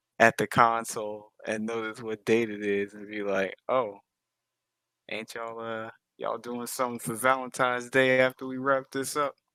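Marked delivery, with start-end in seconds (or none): 3.7-9.3 somewhat sarcastic, pointed, jabbing delivery. Voicing a character after noticing the date on the console: sarcastic tone. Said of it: "Kinda sarcastically".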